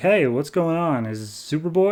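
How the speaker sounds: ordinary delivery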